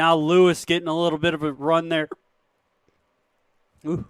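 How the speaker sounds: hiccuping while speaking. Commentator calling the match play by play, with hiccups. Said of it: "sorry, hiccups".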